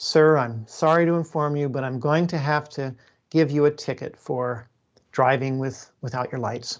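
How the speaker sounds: put-on, very gentle voice. Storyteller quoting a police officer addressing a driver: quoting a very gentle voice. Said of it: "said in a very gentle voice".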